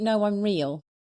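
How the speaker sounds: mock laughing while speaking. Retelling her reply when a stranger asked if she was an angel; retelling a laugh. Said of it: "I started laughing and went".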